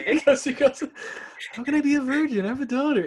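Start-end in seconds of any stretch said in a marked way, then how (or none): 1.5-3.0 very high-pitched character voice. A podcast host discussing a favorite moment quotes Toby's line in the Toby voice. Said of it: "It's in the Toby voice".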